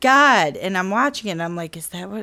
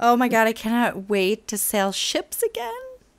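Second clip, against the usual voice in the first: sarcastic, facetious delivery with insincere, overdone eagerness; 3 semitones higher than usual. Answering how excited they are for Rogue: facetious. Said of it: "you sound facetious".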